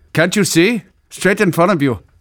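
put-on heavy East Indian accent. A cashier points a customer to the shelf, thick East Indian accent. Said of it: "In his thick East Indian accent".

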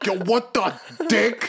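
shrill, very high, loud, angry outburst. Retelling how a friend hopped out of his car, imitating an angry outburst. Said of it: "hops out, hot as fuck".

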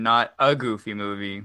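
low, slow stress on "a". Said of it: "an extremely goofy movie".

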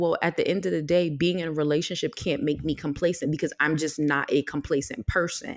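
ordinary delivery

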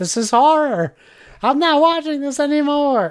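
mock shrieking, high, loud screamed outburst. Retelling how she started screaming at the speaker three episodes in, imitating someone screaming. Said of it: "she started screaming at me".

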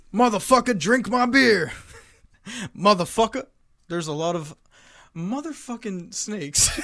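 every word dragged out, heavy and slow. Doing an impression for others to guess: Samuel L. Jackson impression. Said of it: "Samuel L. Jackson?".

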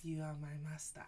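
put-on would-be sultry voice. Retelling a man's prayer in the voice guys use for pillow talk: imitating a put-on pillow talk voice. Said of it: "it's that voice".

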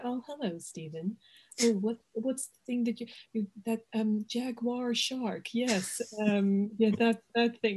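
dismissive, belittling, condescending talking-down tone. Retelling a film press scene with a rival: imitating a belittling tone. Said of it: "just really making him feel like shit".

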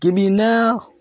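play-acted, insistent, high, demanding screamed yell. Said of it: "He says".

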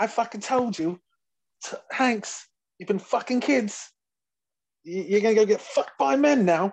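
put-on high, loud British roasting voice.

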